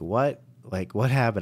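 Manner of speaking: shocked-sounding voice. Retelling own reaction to being run into under caution: retelling a shocked reaction. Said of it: "I was just shocked".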